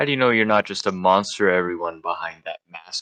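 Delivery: sinister, dark, foreboding voice.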